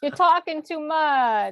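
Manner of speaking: high-pitched put-on dog voice with New York accent. Speaker voicing their dog during a conversation, dog voice with New York accent. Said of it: "he's got a New York accent, my dog".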